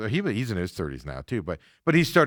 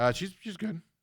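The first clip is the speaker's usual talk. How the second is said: cracking voice breaking up very high; 9 semitones higher, 6 dB quieter than usual. Asked whether Liv Morgan is a good wrestler, answering with voice cracking. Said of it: "Watch your voice is crack".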